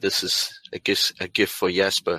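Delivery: stage whisper in a character voice. Voicing a character handing over a girl to Richard: whispering in character. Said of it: "I'll whisper to him".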